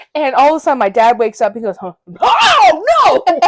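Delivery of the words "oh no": very high panicked scream with drawn-out "oh". Telling how the speaker's dad woke up and started screaming, retelling his panicked scream. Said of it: "He starts screaming".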